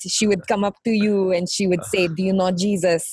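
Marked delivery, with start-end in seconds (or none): 2.1-3.1 thick put-on French accent. Retelling what a woman at church meetings asked: imitating a thick French accent. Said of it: "this little French woman with a thick accent".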